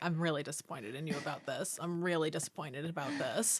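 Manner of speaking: mock, very quiet, disappointed, reproachful tone. Imagining what the speaker's cat would say, Plantain's mock-disappointed voice. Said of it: "look at me in disappointment all the time".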